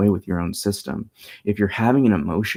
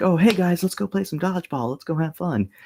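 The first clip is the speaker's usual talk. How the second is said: upbeat, playful, fun voice pitched way up; 10 semitones higher than usual. Demonstrating the playful voice to use with children: playful voice. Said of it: "So you have one playful voice".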